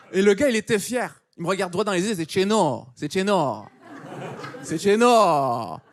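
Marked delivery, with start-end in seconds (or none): 2.2-5.7 put-on very slow, drawn-out, poorly done Moroccan accent. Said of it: "je fais l'accent juif marocain pour, euh, faire le Corse".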